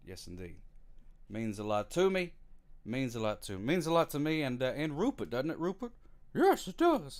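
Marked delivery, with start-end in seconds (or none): 6.3-7.2 very high, loud, silly put-on character voice. Speaker asks Rupert a question and answers it: voicing Rupert. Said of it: "That was just me doing the thing".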